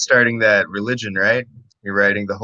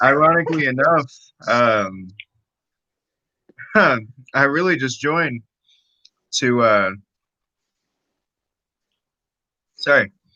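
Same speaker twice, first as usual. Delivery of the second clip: talking while eating, mouth full. Starting to explain why they joined, eating while talking. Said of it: "I'm eating a cupcake".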